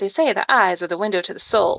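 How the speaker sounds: hard-boiled film noir detective narrator voice. Reading a comic aloud to listeners, in a noir narrator voice. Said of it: "I want to read this in my noir voice".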